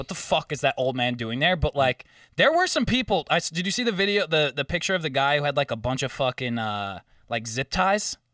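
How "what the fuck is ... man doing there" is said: ordinary talk, nothing marked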